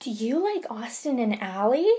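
bizarre, odd kiddish voice. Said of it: "In this really, like, bizarre, kiddish voice".

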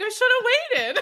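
laughing while speaking.

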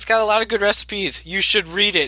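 very stern, severe, no-nonsense voice. Retelling a joke someone else made, in a put-on stern voice. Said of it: "in like this very stern voice".

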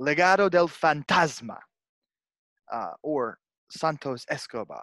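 very drawn-out, slow, showy put-on Spanish accent. Running down a wrestler's many names, put-on accent on names. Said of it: "That accent, Chris".

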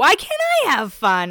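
put-on loud, high, wild, smoky valley girl voice. Retelling how Kristen chimes in to Jessica, in Kristen's crazy, kind of smokerish valley girl voice. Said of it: "in her crazy, like kind of smokerish voice, kind of valley girl".

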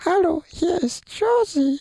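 put-on piping, squeaky, very high cartoon voice. Asked for a comic-figure voice, giving a greeting: high squeaky put-on voice. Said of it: "Ich kann nur so piepsig meine Stimme verstellen".

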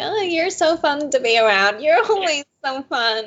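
high, eager, earnest persuasive tone. Retelling a show scene, imitating Raquel trying to sound really convincing. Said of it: "Raquel trying to sound really convincing".

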